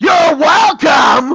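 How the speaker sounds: slow, loud shouted yell.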